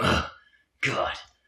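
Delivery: whiny, breathy, whispered, exasperated sighing groan. Complaining about Suds across the episodes; imitating Suds sighing. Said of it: "Suds is just like sighing and going".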